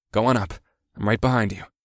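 plain reading voice

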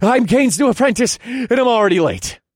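very high, loud, urgent gasped-out voice. Kane's late new apprentice skids to a halt before two guards: gasped out urgently. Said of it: "I gasped out in an urgent voice".

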